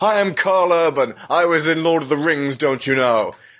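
swaggering, strutting, puffed-up, boastful, full of itself. Imitating Karl Urban strutting around since Lord of the Rings: mock impression. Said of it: "strutting around going".

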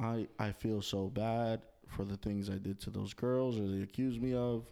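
dead-level, flat, uninflected monotone. Mimicking a half-hearted apology video in a flat monotone. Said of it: "Just like that. Monotone".

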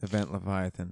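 flat, deadpan delivery. Opening the first comic of the segment after asking for it deadpan; deadpan. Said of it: "I want it deadpan".

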